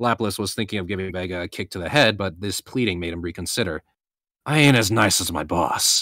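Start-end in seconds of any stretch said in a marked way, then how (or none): 4.5-6.0 icy, cold, slow muttering. Lapis, deciding against kicking Vega, warns him with a cold mutter. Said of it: "he coldly muttered".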